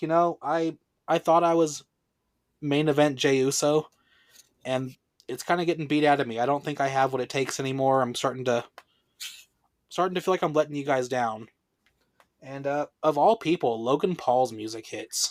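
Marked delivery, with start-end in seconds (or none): none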